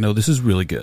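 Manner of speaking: plain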